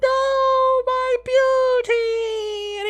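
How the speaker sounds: tiny, very high, shrill, loud flower voice. Voicing a dying flower as it is plucked: little flower voice. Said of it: "you immediately hear a little voice from the flower".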